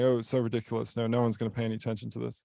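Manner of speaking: ordinary delivery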